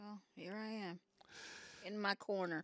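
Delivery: fake, put-on southern drawl. Joking about staying in the corner: put-on southern accent. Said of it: "Talking my southern accent".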